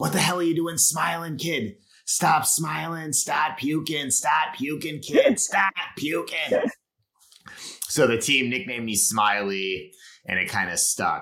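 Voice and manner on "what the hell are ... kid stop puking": high, raging, hard-nosed coach screaming. Speaker retells how a coach yelled at them during a hill workout, imitating a coach screaming. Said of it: "starts screaming at me like".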